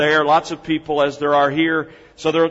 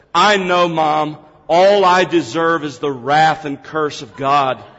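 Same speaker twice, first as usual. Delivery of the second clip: said in a loud voice; 3 dB louder than usual. Quoting a four-year-old daughter's remark in a market line, retelling a loud remark. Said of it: "And in a loud voice".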